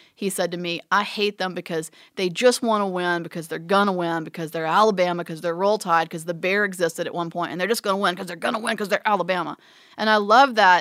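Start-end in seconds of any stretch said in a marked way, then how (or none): none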